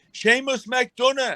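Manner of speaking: put-on high, loud shout in a genuine Dublin accent. Retelling how a stranger in a car shouted his name: imitating a shout in a real dublin accent. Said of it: "he shouts out my name with a real Dublin accent".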